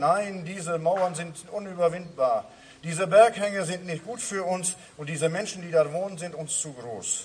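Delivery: ordinary talk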